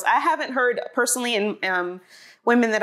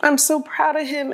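tearful, high crying voice, speaking through tears; 6 semitones higher than usual. Unexpectedly moved to tears while talking about him, the speaker speaks crying. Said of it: "the reason why I'm crying".

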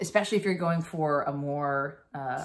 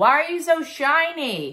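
high, loud, slow calling-out voice. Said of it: "they're like".

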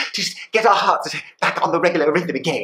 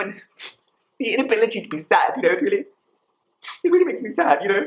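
high-pitched put-on crying voice through the words; 4 semitones higher than usual. Imagining being a robot Star Wars officer who cannot feel sad, mock crying. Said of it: "I'm just doing a little space crying".

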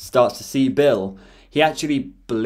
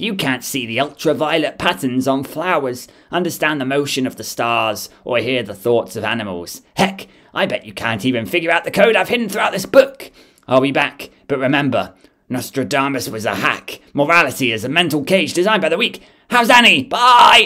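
animated villain voice; 2 semitones higher, 4 dB louder than usual. Speaker delivers a taunting monologue to the listeners in Bill Cipher voice. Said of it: "Not doing that voice again".

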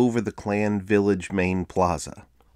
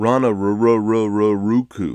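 put-on American accent, drawn-out Raraku; 4 dB louder than usual. Retelling how a guide mocked tourists' pronunciation, in an american accent. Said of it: "in an American accent".

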